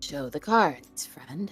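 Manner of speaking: surprisingly icy, frosty, cold voice. Playing a character who demands that a card player show his cards: surprisingly cold voice. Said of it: "in a really surprisingly cold voice".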